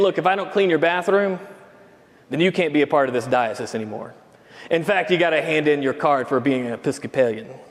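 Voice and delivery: level, flat, expressionless deadpan delivery. Narrating the bishop's reply to the listener, retelling a deadpan reply. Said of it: "says in deadpan".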